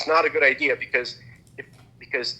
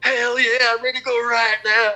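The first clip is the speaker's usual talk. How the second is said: put-on pitched-up country-boy holler; 10 semitones higher, 5 dB louder than usual. Retelling how his roommate did an impression of a redneck: redneck impression. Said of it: "then he does an impression of a redneck".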